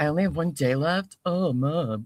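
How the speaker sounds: put-on teenage boy voice. Retelling a late-night talk with a teenager: imitating a teenage son. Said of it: "He was like".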